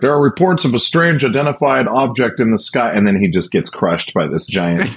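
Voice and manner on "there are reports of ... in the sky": put-on very high newsreader broadcaster voice. Retelling a Muppet Show sketch: imitating the Muppet news reporter. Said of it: "he's like".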